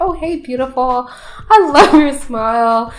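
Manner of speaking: put-on flirty tone. Retelling a match's opening message on a dating app: imitating a flirty opener. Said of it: "starts the conversation off really flirty".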